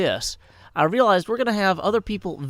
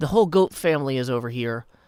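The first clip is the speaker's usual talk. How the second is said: ordinary talk, nothing marked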